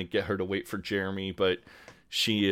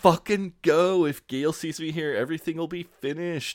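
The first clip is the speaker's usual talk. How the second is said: mock hollering at full volume, high-pitched; 8 semitones higher than usual. Recounting a show scene, the speaker retells Jeremy yelling at Mark. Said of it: "Jeremy just is yelling".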